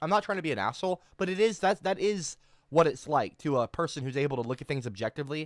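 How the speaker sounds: ordinary talk, nothing marked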